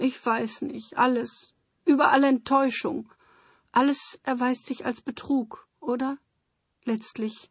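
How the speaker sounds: weeping through words. As Lore, answering someone who begs her not to cry, crying. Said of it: "wein doch nicht".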